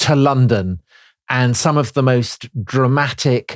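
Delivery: plain reading voice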